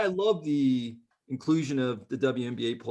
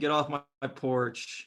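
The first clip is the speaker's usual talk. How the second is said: ordinary talk, nothing marked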